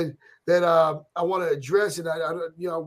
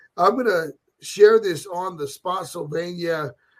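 normal talking voice

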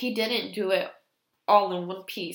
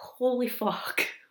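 words broken up by nervous giggles; 4 semitones higher than usual. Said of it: "laughing and slightly giggling".

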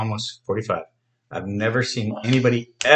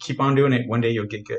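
usual speaking voice

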